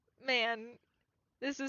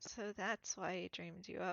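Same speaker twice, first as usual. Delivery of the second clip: very soft, indistinct murmur, words half swallowed; 3 semitones lower, 8 dB quieter than usual. A character covering up something much worse speaks, in a very soft mumble. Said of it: "very softly mumbles".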